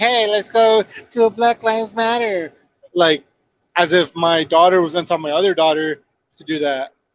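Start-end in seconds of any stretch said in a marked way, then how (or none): 0.0-2.5 put-on high, little, babyish tiny-child voice. Mocking the other speaker's quote of her sister, repeat it in a little baby voice. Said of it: "when you use a little baby voice, like".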